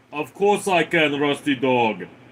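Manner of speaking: put-on Austrian accent. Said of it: "can you talk like Arnold Schwarzenegger".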